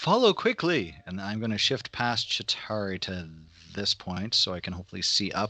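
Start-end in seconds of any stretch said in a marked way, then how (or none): 0.0-1.0 restrained, moderate yell at a very high pitch. Calling to allies who can't see them: moderate yell. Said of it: "I'm just gonna yell, but in a decent voice".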